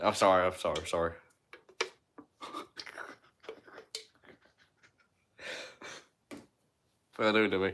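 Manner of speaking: talking through laughter. Talking about college football coaches getting fired, laughing while talking. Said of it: "Why am I laughing?".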